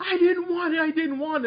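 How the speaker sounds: loud high-pitched screaming.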